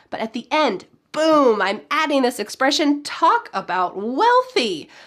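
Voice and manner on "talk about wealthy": talk about wealthy slowed right down, wealthy stressed. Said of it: "I'm really emphasizing the fact that they're wealthy".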